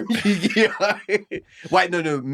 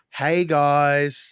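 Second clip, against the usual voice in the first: sounding downcast. Retaking a scripted greeting to a group of guys: sounding down. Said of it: "you sound really down".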